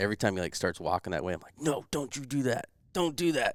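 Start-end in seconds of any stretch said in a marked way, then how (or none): 1.6-3.5 high-pitched yell carrying across a distance. Retelling yelling at a companion through the spotting scope: retelling own past yelling. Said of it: "yelling at him through the spot and scope".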